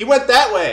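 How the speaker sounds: very high, very loud, panicked, freaked-out yell. Voicing freed slaves pointing where someone fled: freaked out. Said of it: "freaked out".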